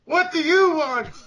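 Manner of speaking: highest possible, very high villain voice. Reading a story aloud, voicing the villainess holding Kim captive: high voice. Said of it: "That's as high as it gets".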